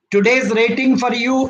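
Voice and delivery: normal talking voice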